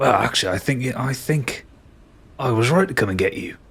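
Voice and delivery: hushed, close whisper. A game master voicing a bone creature perched on someone's shoulder, whispering in his ear. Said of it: "it kind of whispers where his ear would be".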